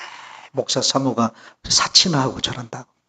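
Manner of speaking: soft, quiet murmuring. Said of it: "수근수근 또 거린다는 거예요".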